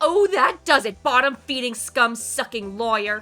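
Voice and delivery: furious screaming. Voicing the witness in the game as she turns on the lawyer: screaming at the lawyer. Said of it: "She's gonna scream at you".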